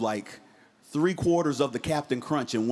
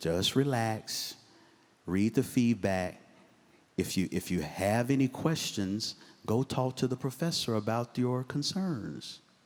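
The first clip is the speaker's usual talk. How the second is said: mock calm, smooth voice; 3 semitones lower, 4 dB quieter than usual. Retelling a mother calming her upset daughter on the phone: imitating a calm, smooth mom. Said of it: "she was real calm".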